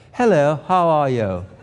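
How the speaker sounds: posh upper-class English, stiff upper lip. Showing how posh english people talk, posh english accent with stiff top lip. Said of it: "their top lip never moves".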